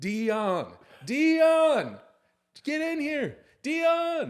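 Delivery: swooping shriek, very high and very loud. Retelling a man on a media call screaming for his brother, retelling a scream. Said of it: "he just starts screaming".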